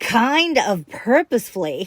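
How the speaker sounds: mock, laid-on sarcasm, every word pointed, swooping. Retelling how Nancy Grace interrupts, in a mock-sarcastic Nancy Grace tone. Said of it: "with a sarcastic tone ... I said it just like her".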